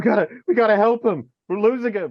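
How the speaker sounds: high, loud sobbing, words cried out. Retelling trying to help someone collapsed on the ground, retelling sobbing speech. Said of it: "and I'm just sobbing".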